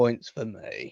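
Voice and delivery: soft, glum, sad, deflated voice. Teasing someone by repeating what they just said, imitating a sad voice. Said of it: "You sounded so sad".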